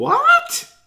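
shrill, very high, loud squeak. Narrator reads a character's reply to an offer, squeaked. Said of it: "Susie squeaked".

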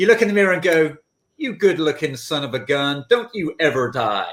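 put-on American accent. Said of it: "it's a great accent. Brilliant accent".

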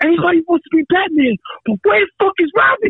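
mock very high-pitched screaming. Retelling what a guy said while they were getting chewed out, retelling his scream. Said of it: "he was like screaming".

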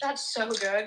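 forced, awkward, put-on, obligatory-sounding tone. Mimicking the other speaker's show recommendation, imitating a forced awkward tone. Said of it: "Why was that so awkward?".

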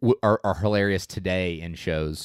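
ordinary talk, nothing marked

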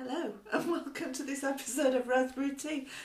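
very high, giggling throughout. A podcast host opens the episode after several false starts, giggling. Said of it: "I'm giggling a little bit".

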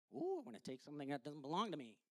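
very soft, low, hushed silly monkey voice. Describing a monkey sniffing rotten bananas in a box, voicing Jabu the monkey. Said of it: "Doesn't really talk like that".

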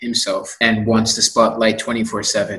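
ordinary delivery

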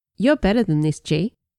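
ordinary delivery

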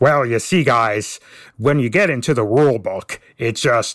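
unhurried, slow, deliberate explaining tone. Doing an impression of Teflon after he leaves: Teflon impression. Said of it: "I can do an impression".

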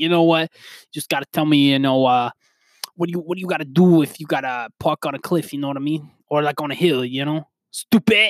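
put-on New York accent. Retelling what a man said, the speaker does a New York accent impression. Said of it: "he had a New York uh accent to him".

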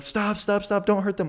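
freaked-out, high, frantic screaming. Retelling the girls in the getaway car, imitating their screaming. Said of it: "they're screaming".

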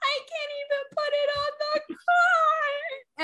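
very high, drawn-out mock sobbing, "car" stretched long. Retelling breaking down over a big stroller box, retelling sobbing. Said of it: "and I'm sobbing".

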